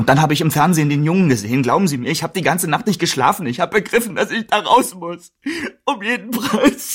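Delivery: crying through every sentence. Confessing to a listener about being blackmailed, crying. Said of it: "Hör auf zu heulen!".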